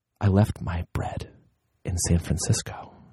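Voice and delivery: eerie, low, creepy whisper, very close. Retelling a kids' movie scene where she leans in close, imitating a creepy whisper. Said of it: "just whispers".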